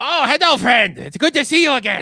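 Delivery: high, very loud goblin character voice. Voicing a goblin greeting a player who lands on its head: goblin voice. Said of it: "one of the goblins who just leans up and says".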